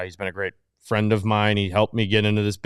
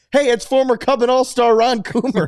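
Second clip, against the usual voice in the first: imitated yell, higher and louder; 7 dB louder than usual. Retelling a friend yelling at a driver leaving the parking lot: imitating Corey yelling. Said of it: "Corey just yells".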